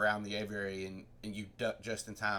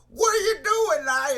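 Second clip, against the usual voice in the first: very high holler at full blast; 14 dB louder than usual. Doing an impression while the others talk about a lion pit: Adam Sandler voice. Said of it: "That's my Adam Sandler impression".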